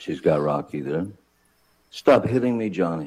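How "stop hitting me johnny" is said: mock freaked-out, upset screaming, much higher pitch. Retelling a woman's phone call, imitating a freaked-out, upset scream. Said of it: "in her best freaked out, upset voice, high-pitched".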